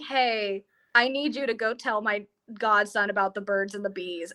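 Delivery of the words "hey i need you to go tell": plain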